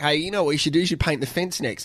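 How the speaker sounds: ordinary talk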